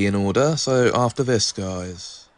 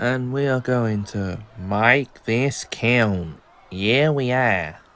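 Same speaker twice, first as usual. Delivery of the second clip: slow, drawn-out Aussie drawl. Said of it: "I just adopted my Aussie accent there".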